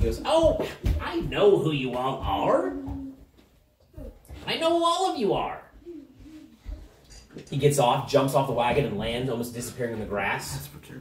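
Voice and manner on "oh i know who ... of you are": unhinged gnome character voice, high and slow. A storyteller voices a gnome speaking to Lucinda's group: mad gnome voice. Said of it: "The gnome says, ... I'm quite mad".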